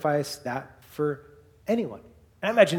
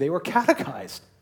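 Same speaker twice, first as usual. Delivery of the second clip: excited words, voice cracking and breaking. Answering their own question to the audience, the speaker's voice cracks: voice cracking. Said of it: "I don't know why my voice cracked there".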